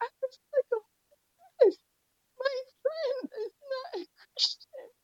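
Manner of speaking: high, tearful crying.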